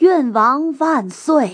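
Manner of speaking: loud drawn-out cheering.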